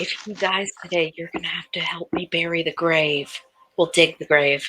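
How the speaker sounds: hushed, half-whispered voice. Replying to another character's half-whispered remark, she is half-whispering back. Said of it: "She's gonna whisper back".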